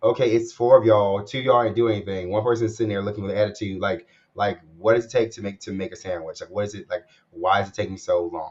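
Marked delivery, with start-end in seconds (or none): none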